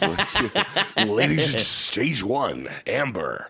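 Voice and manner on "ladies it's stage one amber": strip club announcer voice. Joking about how the gravel voice slides into a stripper club voice. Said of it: "my stripper club voice".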